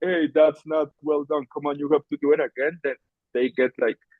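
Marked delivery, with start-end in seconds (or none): 0.0-2.8 play-acted stern, harsh scolding tone. Acting out telling workers off about poor work: imitating a harsh scolding.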